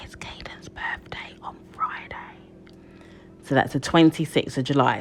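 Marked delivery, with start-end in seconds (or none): 0.0-2.2 hushed, very quiet voice. Announcing that Caden's birthday is on Friday, whispered. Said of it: "Let's whisper".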